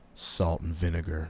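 with disgust. A man who just stepped on an empty chip bag: with disgust.

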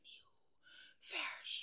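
eerie, hushed, creepy whispered voice. Describing a crowded hall going silent on entering, retelling a creepy whisper. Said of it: "echt zo eng fluisterend ook?".

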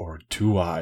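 mock growling monster voice. Retelling a story about someone's reply, acting it out in a growly, monster voice. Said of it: "in his, like, growly, like, monster voice".

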